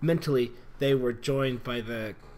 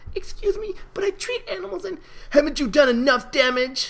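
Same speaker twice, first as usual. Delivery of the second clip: very high, feeble squeak with no force; 8 dB louder than usual. Narrating Fluttershy speaking up to foals blocking her path, in a weak squeaky voice. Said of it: "her voice devoid of any power, squeaked out".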